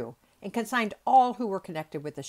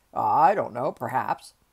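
slightly sheepish, a little embarrassed tone; 6 semitones lower, 6 dB louder than usual. Fix replies to a teasing question, a little embarrassed. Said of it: "a little embarrassed".

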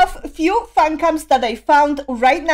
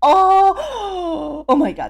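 voice cracking, much higher pitch; 3 semitones higher than usual. Reacting to a performance clip seen on Twitter, voice cracking. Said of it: "my voice is cracking already".

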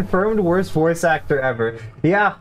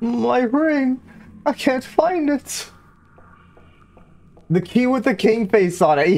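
high, tearful, sobbing woman's pleading voice; 8 semitones higher than usual. In a tabletop game, the speaker voices a sobbing statue of a woman: sobbing woman voice. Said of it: "That's your woman voice".

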